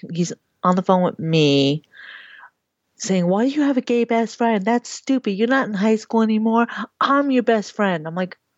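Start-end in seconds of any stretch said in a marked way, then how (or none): 3.3-8.1 berating, ranting, yelling man's voice. Recounting a phone call during which he yelled at her, retelling a man yelling. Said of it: "he's yelling at her".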